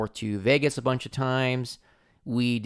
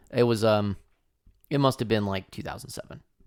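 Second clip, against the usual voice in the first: normal talking voice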